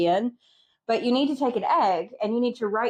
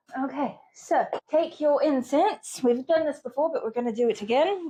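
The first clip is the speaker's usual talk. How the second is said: shoddy, bad, put-on British accent; 4 semitones higher than usual. Two people doing an incense ritual over tea, in a bad fake British accent. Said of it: "our shitty accents".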